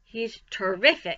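ordinary delivery

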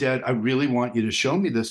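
plain

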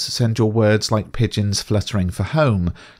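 ordinary talk, nothing marked

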